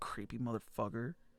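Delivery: low, very quiet muttered mumble. Voicing an NPC who mutters an insult: mumbling. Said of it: "you hear him mumble".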